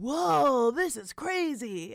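very slow, stretched-out, teasing drawl. Showing the other speaker how they react to new Twitter followers, imitating the person you're talking to. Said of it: "I don't sound like that".

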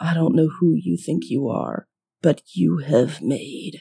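whisper building to a guttural growl. Game character addressing an unknown man, whisper building to guttural growl. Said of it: "it's like this guttural growl".

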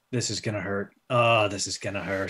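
low, dropped mutter to oneself. In a tabletop game, a player voices Hagen during a fight with a troll, muttering under his breath. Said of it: "muttering under his breath".

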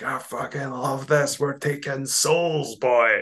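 put-on, wild, high, drawn-out scream. Recalling running along with a mate, retelling a scream. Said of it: "we were screaming at the top of our heads".

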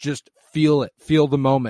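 loud, urgent, coaxing tone.

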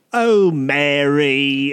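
put-on British accent. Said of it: "six or seven different British accents".

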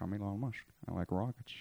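very quiet, low, muffled mouth-full voice. Imitating how a public figure talks, as if with toothpaste in mouth: Elon Musk impression. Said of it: "pretend like he has toothpaste in his mouth".

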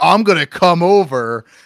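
put-on yelling. Recalling a man who phoned and yelled at them as kids: retelling a yell. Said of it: "he's yelling at the fucking like 11-year-old kids".

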